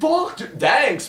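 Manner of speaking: high, drawn-out, freaked-out cry.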